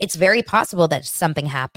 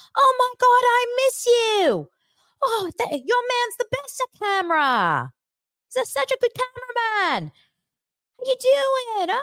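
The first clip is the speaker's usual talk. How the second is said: very high-pitched put-on Australian accent. Retelling a man's greeting, speaker is imitating an australian accent. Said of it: "I had no idea he was Australian".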